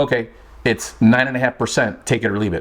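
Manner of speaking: plain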